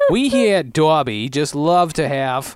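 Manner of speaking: put-on accent from Long Island. Make up a commercial voiced by somebody from Long Island, in a put-on Long Island accent. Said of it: "somebody from Long Island to voice the commercial".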